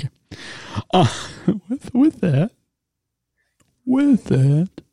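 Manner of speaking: words broken up by laughter. Trying to continue after another speaker's answer, laughing while talking. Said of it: "Sorry, I'm laughing".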